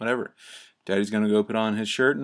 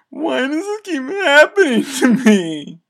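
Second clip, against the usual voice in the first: put-on, very high, very loud bawling, wailing sob; 10 dB louder than usual. Retelling a kid with his shirt on backwards: imitating a kid crying. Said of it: "crying, breaking down crying".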